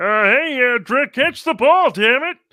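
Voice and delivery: shrill, very loud, full-blast scream. Joking about a quarterback whose receiver drops passes: screaming like Kermit the Frog. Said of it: "run around screaming like Kermit".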